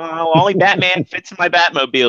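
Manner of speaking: high, put-on nerdy kid voice. Retelling a cartoon scene, quoting the nerdy kid: imitating a nerdy kid's voice. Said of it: "he talks like this".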